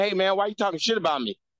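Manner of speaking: put-on light New Orleans accent. Retelling a schoolmate confronting him, imitating his little New Orleans accent. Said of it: "with his little New Orleans accent".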